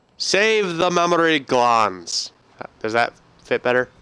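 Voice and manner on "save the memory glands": slow, Scottish-accented delivery. A speaker jokingly rephrases a line, in a Scottish accent. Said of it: "Don't know why you said it in a Scottish accent".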